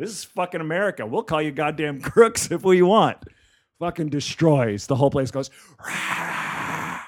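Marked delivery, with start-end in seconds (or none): 0.0-3.2 put-on yell. Telling a story, the speaker acts out what he yelled, retelling a yell. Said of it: "I yell out".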